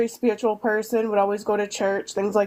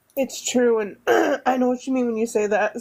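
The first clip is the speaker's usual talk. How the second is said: choked-up voice, catching mid-sentence; 3 semitones higher than usual. Agreeing with the other speaker about a deeply intuitive woman, choked up. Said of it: "I'm getting choked up".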